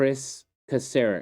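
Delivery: very slow, drawn-out, every syllable stretched. Discussing a team's roster, announcing a coach's name, said real slow. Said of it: "I'm going to say this real slow".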